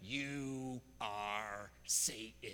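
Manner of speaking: menacing, sinister movie-villain voice with drawn-out "you". Recounting a man who pulled him close during a handshake: retelling a sinister Hollywood voice. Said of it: "with the most sinister Hollywood voice that he could muster".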